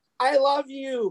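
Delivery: put-on high, screaming fan-girl scream. Speaker describing girls at concerts, imitating girls screaming. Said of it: "these girls are like screaming".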